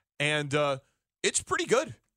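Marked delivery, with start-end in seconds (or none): 1.2-1.9 high, surprised, admiring tone. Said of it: "You sound so surprised".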